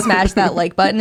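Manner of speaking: ordinary talk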